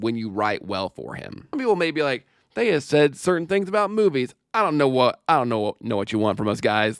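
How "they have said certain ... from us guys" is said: ordinary talk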